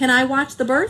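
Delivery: ordinary delivery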